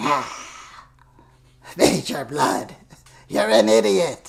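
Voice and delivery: weird, loud, creaky villain voice, slow and rasping. Imitating a cartoon villain giving orders to Major Blood: weird Cobra Commander voice. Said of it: "He had that weird voice".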